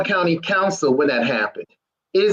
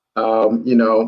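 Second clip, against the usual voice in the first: gloomy, sad voice. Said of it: "Danny, you sound sad".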